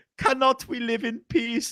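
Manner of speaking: put-on poor Middle Eastern accent. Quoting a game's worker unit when selected: put-on dodgy Middle Eastern accent. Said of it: "I've got the accent down".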